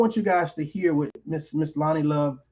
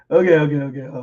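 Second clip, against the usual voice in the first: giggly talk, breaking up, laughing through the words; 6 dB louder than usual. Reacting to a video's length, laughing while talking. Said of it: "let me stop laughing".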